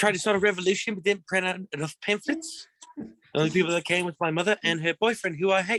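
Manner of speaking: very high-pitched New Zealand accent. Asked to do Korg from the Thor movies: Korg voice. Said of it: "built in with the accent you got there".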